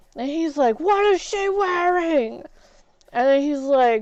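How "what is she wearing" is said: high-pitched screaming in a coach style. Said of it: "he started screaming at him".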